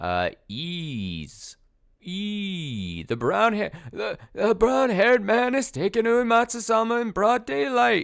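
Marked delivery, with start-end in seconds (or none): 2.0-8.1 put-on old woman voice, slipping and off. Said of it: "I'll warm back up to my old lady voice soon".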